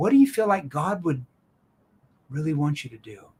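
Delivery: caring, worried tone. Showing verbal pacing while asking what god would want, lowered, concerned tone. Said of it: "verbal pacing and lowering my tone into that concerned tone".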